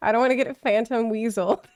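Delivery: ordinary delivery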